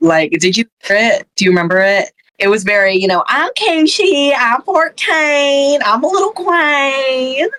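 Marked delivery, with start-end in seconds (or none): 3.3-7.5 high Southern drawl, "queen" stretched long. Imitating a contestant's pre-recorded intro: imitating Miss Cushy's Southern accent. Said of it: "I can't tell if that was a fake accent".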